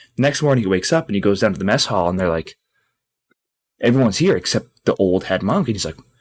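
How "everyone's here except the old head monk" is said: ordinary delivery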